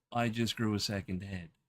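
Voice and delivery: ordinary talk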